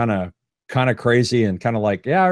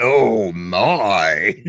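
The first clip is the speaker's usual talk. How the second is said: put-on demonic devil voice; 2 semitones lower than usual. Showing another speaker how the line should be said, in a devil voice. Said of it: "you got to say it in a devil voice".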